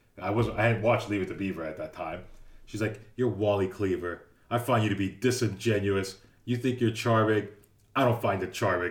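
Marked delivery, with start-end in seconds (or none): 3.2-8.9 upset, indignant, angry, scolding tone. Retelling how the arts teacher answered before walking off: imitating an angry teacher. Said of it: "So angry".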